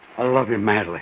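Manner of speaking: very low voice, heartfelt and full of feeling. Coaching the other speaker on how to say the line, with feeling. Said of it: "say it with feeling".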